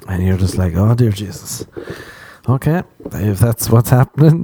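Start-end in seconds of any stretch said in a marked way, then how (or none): none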